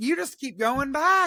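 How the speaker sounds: shrill, loud, high-pitched yelling outburst. Talking about a man who kept complaining and going back, the speaker is: yelling. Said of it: "Now I'm yelling".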